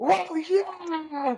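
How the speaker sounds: very high whoop, with yeah drawn out. Retelling the villain blowing things up: imitating Jason Momoa's villain cheering. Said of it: "he's, like, blowing stuff up".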